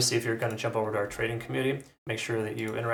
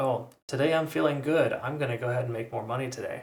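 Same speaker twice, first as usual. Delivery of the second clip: mock scornful, tongue-in-cheek, sarcastic mocking voice. Warning traders against jumping in carelessly: sarcastic mock quote of a trader. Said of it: "I speak sarcastically".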